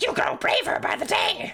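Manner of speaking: loud toad character voice, pitched way up. Voicing a game character while playing: toad voice. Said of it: "It's just a toad voice".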